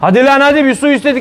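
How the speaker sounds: play-acted, very high-pitched, shrill shouting. Mocking a man who yells at his wife in front of a guest: retelling a yell. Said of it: "Oğlum ne bağırıyorsun ya?".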